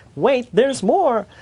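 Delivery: cheesy salesman pitch. Wrapping up a session with a joke: cheesy used-car-salesman pitch. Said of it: "sound a little bit like a used car salesman pitch".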